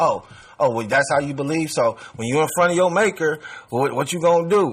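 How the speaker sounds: mock sarcastic tone. Quoting a woman's remark about belief, imitating a sarcastic jab. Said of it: "the way she said it was kind of like".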